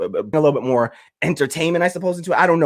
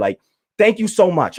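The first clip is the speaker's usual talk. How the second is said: emotional, overcome, choked-up, grateful-sounding voice; 4 semitones higher than usual. Thanking the folks supporting them, choked up. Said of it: "I'm gonna get choked up here".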